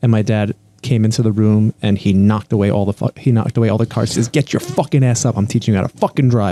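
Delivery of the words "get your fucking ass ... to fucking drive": crude, coarse, rough-edged delivery. Retelling how a dad told someone to get up: imitating a dad's crude talk. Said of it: "That's the way my dad used to talk".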